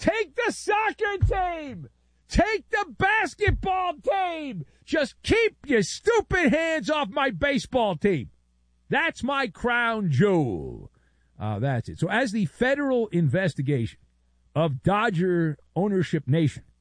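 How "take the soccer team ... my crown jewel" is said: mock very high scream at top of lungs. Acting out the man clutching on to Chavez Ravine, imitating Mark Walter screaming at the top of his lungs. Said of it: "he's screaming at the top of his lungs".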